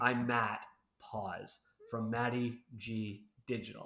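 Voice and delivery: slow, deliberate, measured words set to a steady beat. Demonstrating how he practiced introducing himself on calls, slow deliberate tempo. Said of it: "slowing myself down".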